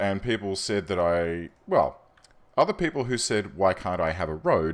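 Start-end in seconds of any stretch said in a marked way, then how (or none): none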